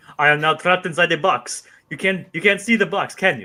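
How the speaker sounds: put-on announcer-style voice with French-sounding accent. Imitating a mime who announces everything: Albert Brooks's French-sounding mime voice. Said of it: "a very foreign French-sounding guy who would just announce everything".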